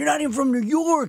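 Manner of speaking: put-on shrieking, very high, frantic screamed outburst. Speaker retells a man from new york screaming at a changeling, retelling a scream. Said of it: "And he's screaming".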